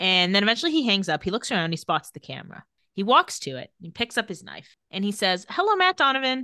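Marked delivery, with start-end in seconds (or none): 5.5-6.4 higher-pitched attempt at a Czech accent. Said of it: "in [name]'s best attempt at a Czech accent".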